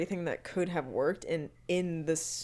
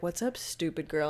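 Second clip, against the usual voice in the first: mock negative, talking-down, bullying, belittling tone. Retelling a show scene, imitating Tristan's belittling tone. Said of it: "negative and bullying and belittling".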